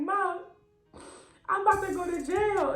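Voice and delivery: mock crying. Retelling what they told Mom back then, acting out their own past crying. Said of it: "I'm crying".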